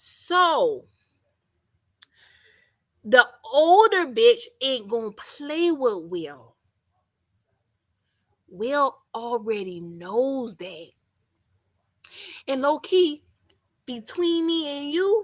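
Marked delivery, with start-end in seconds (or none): 0.0-10.9 deliberately slowed-down, spelled-out delivery. Speaker slows down so the listener can keep up; talking slower. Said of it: "I'm talking slower".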